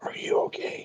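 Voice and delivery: whispered, soft, gentle and tender. Gently picking up a growling hammer in character, whispering to it. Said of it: "and whisper to it".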